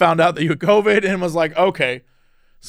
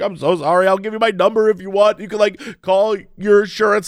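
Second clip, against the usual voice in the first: put-on crying, tearful voice; 3 semitones higher than usual. Retelling how the other driver apologized: imitating someone crying. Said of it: "She's like, like, crying".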